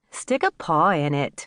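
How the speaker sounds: plain reading voice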